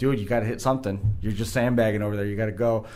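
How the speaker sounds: ordinary talk, nothing marked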